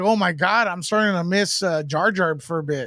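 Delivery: ordinary talk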